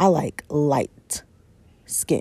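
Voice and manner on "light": stress on 'light', much lower pitch. Quoting what he said when told to holler at her, stress on 'light'. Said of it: "he made sure to put the emphasis on that light".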